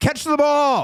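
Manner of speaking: put-on, very high, shrill shouted yell. Describing dads and coaches at youth sports, imitating a yelling dad. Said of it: "the dads that yell".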